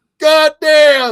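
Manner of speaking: very loud, high, shrill, piercing scream of pain. Retelling a fight where he could be heard but no longer seen, imitating New Jack screaming. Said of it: "you can still hear him like screaming".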